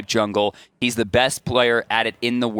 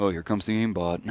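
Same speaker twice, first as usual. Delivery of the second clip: put-on flat monotone, quieter; 4 semitones lower, 7 dB quieter than usual. Recalling sitting with AFK, imitating Cyclone's monotone voice. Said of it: "in his weird little monotone voice".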